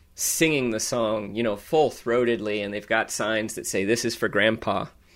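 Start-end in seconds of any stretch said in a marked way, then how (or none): none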